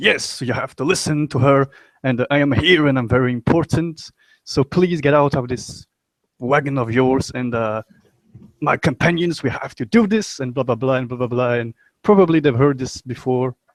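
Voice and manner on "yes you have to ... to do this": grand, rousing, self-important leader speech delivery. Voicing the character's speech from the Inspiring Leader feat: inspiring leader speech. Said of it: "I just imagine him being like".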